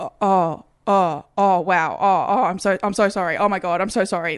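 mock caught off guard, startled, flustered, tumbling words. Retelling how the worker reacted on seeing the id: imitating a startled, apologetic worker. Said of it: "literally like that".

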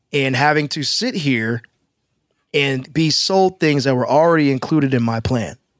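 usual speaking voice

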